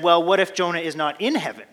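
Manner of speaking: put-on smug tone. Telling a story, voicing the teacher's reply to a little girl, mock-smug. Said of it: "the teacher smugly said".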